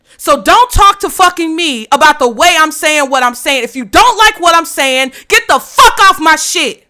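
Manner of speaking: heated, furious, fed-up angry rant. Speaking to people who complain about their tone, the speaker is angry yelling. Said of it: "And I'm yelling at you about it".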